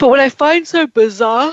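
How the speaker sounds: words spoken through a yawn. A tired speaker on a call-in show discussing MMA, yawning while talking. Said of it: "I'm yawning".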